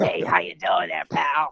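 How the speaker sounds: very low, gruff trucker voice. After a month of touring, the speaker greets someone in a truck driver voice. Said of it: "I sound like a truck driver".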